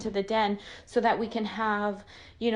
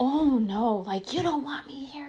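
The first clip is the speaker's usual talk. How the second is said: mild, toned-down, screamy mock yell; 4 semitones higher than usual. Speaker acting out what he said during their fight, imitating someone screaming.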